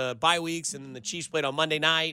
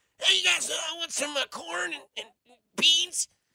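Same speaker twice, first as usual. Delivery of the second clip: very high, bad put-on voice, stumbling through; 13 semitones higher than usual. Joking about taking restaurant orders like Patrick Mahomes: terrible Patrick Mahomes impersonation. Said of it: "That's a terrible Patrick Mahomes impersonation".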